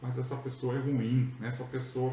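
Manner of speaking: plain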